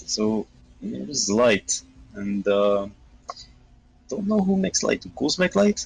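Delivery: put-on Eastern European accent held throughout. Speaker keeping up a put-on accent, Eastern European accent. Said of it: "I'm just gonna stick with Eastern European".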